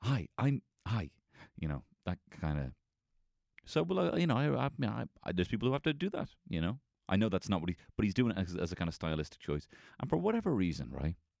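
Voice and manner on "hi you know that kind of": put-on stammering speech, lower pitch. Mocking a man's speaking style, the speaker imitates stammering speech. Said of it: "you sound like you're fucking stammering".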